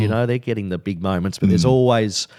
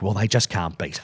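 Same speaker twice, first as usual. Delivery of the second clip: exasperated, fed-up, resigned exclamation; 4 dB quieter than usual. Retelling own race call right on the line: retelling an exasperated call. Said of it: "a exasperated tone".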